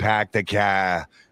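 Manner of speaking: put-on overdone movie-style Boston accent. Mocking how movies set in Boston overdo the accent: overdone movie Boston accent. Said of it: "if they're doing a movie set in Boston".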